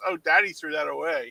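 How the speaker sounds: ordinary delivery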